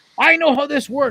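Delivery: very high, loud, angry yell. Retelling what a contractor shouted back at them, imitating someone yelling. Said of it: "He's swearing at me and yelling at me".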